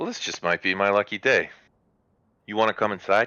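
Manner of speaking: grinning while speaking. Game master voices a woman welcoming the party to her longhouse: grinning. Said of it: "she starts to grin".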